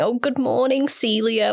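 mock patronizing voice. Mocking how they greet the women, imitating a patronizing tone. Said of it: "in a really kind of patronizing tone of voice".

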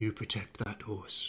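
whispering. Voicing a character telling a golem to guard a horse: whisper. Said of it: "you hear him whisper".

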